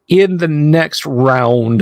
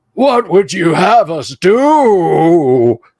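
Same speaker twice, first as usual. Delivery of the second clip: put-on very slow, stretched, elderly goblin voice; 4 semitones higher than usual. Voicing goblins asking their summoner for orders: geriatric goblin voice. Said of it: "the goblins sound like they're geriatric".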